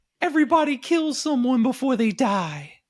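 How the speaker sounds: very high, loud, swooping cartoon creature voice. Retelling Akira turning around with scissors at Rob's throat, imitating Akira's voice. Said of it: "that was the Smurf voice".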